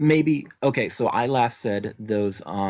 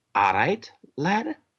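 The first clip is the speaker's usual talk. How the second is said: put-on Irish accent with sing-song, swooping tune; 5 semitones higher than usual. Speaker who has just switched into an Irish accent, Irish accent. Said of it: "I just switch Irish".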